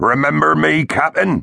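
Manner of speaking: menacing, high, rough, mammoth snarl. Narrator reading the mammoth Tonka confronting the captain, Tonka's snarling mammoth voice. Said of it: "the mammoth snarled".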